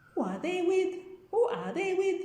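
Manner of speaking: Swahili-accented English. Showing how Swahili carries over into English, in Swahili-accented English. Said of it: "the accent is just uh, Swahili moved into English".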